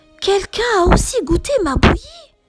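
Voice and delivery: sweet, tender, gentle, high storybook voice. Narrator reads Maman ours' line after she looks at the table: Maman ours soft voice. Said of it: "de sa voix toute douce".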